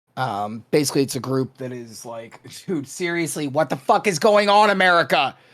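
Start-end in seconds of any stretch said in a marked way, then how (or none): 2.7-5.3 yelling loudly at full voice. Speaker describes the abortion fund group the money will go to, yelling. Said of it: "sorry, I didn't mean to yell".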